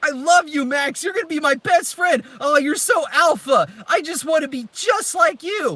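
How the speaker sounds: very high, loud, obnoxious cartoon pug voice. Mocking a show's celebrity dog voices, the speaker acts out the pug: loud obnoxious pug voice. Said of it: "that is to be loud and obnoxious".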